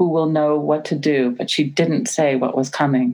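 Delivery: ordinary delivery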